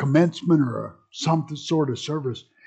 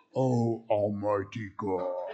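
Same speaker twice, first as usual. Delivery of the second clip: solemn, low, hushed, holy-sounding preaching voice; 6 semitones lower, 8 dB quieter than usual. Retelling praying before class when a professor asked him to: lower preaching voice. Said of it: "your voice gets lower".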